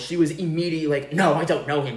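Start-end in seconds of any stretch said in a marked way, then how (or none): 1.1-2.0 mock quick, rushed, hasty delivery. Retelling how she answered when asked if she knew him, mimicking a quick denial. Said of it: "she was so fucking quick with it".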